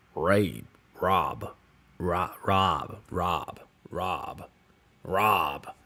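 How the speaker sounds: low, very slow, drawn-out American accent. Testing how a word sounds in an American accent, American accent. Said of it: "say that in an American accent".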